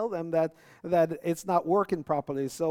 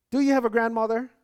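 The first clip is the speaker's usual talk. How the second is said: put-on Jamaican accent, much higher, louder; 6 semitones higher, 4 dB louder than usual. Retelling what a mother asked a guy, in a Jamaican mom accent. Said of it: "trying to find my best Jamaican mom accent".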